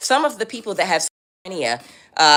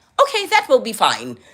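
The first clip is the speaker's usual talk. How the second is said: regal, royal-sounding voice, pitched a touch high; 5 semitones higher than usual. Retelling a homeless woman answering staff about crumpets: Queen of England voice. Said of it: "speaking like the Queen of England".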